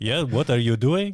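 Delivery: put-on French-Canadian accent. Retelling own past in French class, speaking in a French accent: George St-Pierre accent. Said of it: "You sound like George Saint Pierre now".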